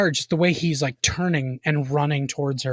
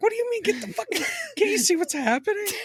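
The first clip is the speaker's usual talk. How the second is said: bewildered outburst, very high and swooping pitch; 3 dB quieter than usual. Acting out a movie character's reply: imitating a confused character. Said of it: "she's so confused".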